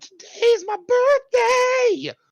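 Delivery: very high, very loud, wild, shrill screaming. Retelling a movie scene where a ship starts shooting fireworks: imitating screaming. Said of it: "Just screaming that into the wind".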